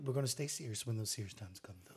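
soft, mock-serious whisper. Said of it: "he started whispering".

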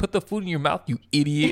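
put-on cruel, belittling scolding tone. Imagining how a babysitter would scold a baby: imitating a mean babysitter. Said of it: "he would just be mean".

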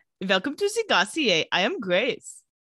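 bad, terrible put-on Russian accent. Among friends on a show, asked to greet viewers as a character, in a terrible russian accent. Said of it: "say something in a terrible Russian accent".

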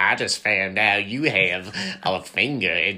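animated sitcom cartoon dad voice. Joking about redoing a bit in a different voice, Cleveland from Family Guy voice. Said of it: "do it in a different voice, like Cleveland from Family Guy".

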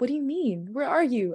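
urgent, pressing. On the phone with her sobbing sister, the narrator asks, urgently. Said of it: "I asked urgently".

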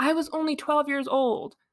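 acted, high-pitched screaming outburst. Recounting a story where she screams at him; retelling a scream. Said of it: "she like screams at him being like".

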